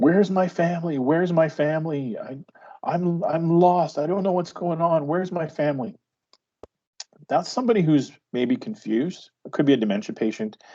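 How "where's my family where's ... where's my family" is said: lost, high-pitched, screaming cry. Explaining what a patient's screaming can reveal, the speaker imitates a screaming patient. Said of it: "my patient is screaming something like".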